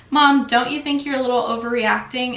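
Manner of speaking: ordinary delivery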